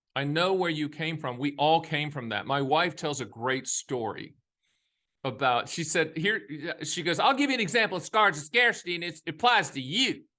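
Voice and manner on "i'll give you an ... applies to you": quick, high-pitched mock voice. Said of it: "She doesn't talk like that".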